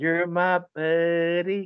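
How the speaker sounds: eerie, creepy put-on doll voice, buddy drawn out. Discussing the Child's Play remake, someone speaks in creepy Child's Play doll voice. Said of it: "it's so creepy that you do it so well".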